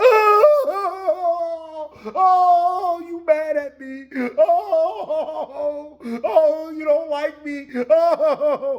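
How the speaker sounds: play-acted loud sobbing wail, very high, very slow. Retelling how a passenger burst out crying: imitating someone crying. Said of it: "And she just bust out crying".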